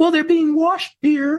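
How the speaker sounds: put-on, very high-pitched woman's voice. Retelling asking Merida where the towels were, imitating Merida. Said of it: "That's my female voice".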